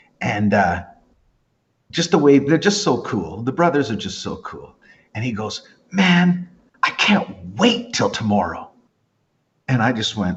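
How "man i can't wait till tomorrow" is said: put-on serious tone. Retelling what a bass player once said: imitating a serious tone. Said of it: "he was all serious".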